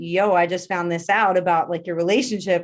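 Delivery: normal talking voice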